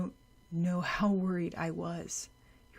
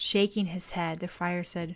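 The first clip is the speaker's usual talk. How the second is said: plain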